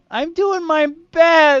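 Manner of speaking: very high, very loud, slow, drawn-out wailing sob. Joking that the insulted labyrinth answers back: crying labyrinth voice. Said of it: "And it starts crying".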